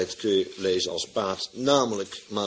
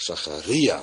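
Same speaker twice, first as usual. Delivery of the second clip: Zacharia with stress on ri; 3 semitones lower than usual. Following the accent mark in a bible, stress on ri in zacharia. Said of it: "boven de I van Zacharia zelfs een streepje staat voor het accent. Dus wij worden echt verondersteld uit te spreken Zacharia".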